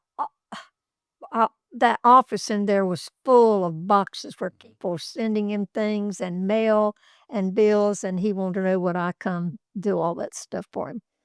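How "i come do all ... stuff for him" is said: ordinary talk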